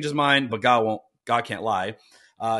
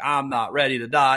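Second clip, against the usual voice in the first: put-on heartfelt, raw, emotional pleading. Retelling how the dying king begged God: imitating Hezekiah pleading. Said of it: "starts pleading with God".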